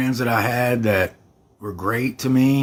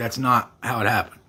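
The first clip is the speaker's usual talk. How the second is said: ordinary talk, nothing marked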